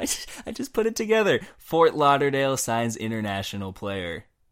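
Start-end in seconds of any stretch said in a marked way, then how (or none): 0.0-1.4 very high, giggling, laughing through words. Answering another speaker who asks why they are laughing: laughing while talking. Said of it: "why are you laughing?".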